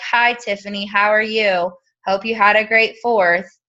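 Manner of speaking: dead-level, lifeless monotone with no lift. Example of sounding monotone while talking to someone: flat monotone. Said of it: "if you're monotone and you're like".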